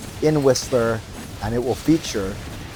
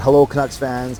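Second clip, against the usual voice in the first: ordinary delivery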